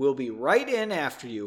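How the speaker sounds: ordinary delivery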